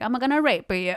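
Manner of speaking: high, goofy, silly put-on Italian accent. Telling a joke about a bus driver, the speaker quotes him in a goofy Italian accent. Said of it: "that goofy accent".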